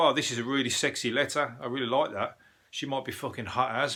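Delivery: ordinary delivery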